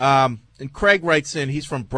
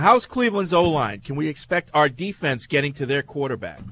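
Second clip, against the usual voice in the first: plain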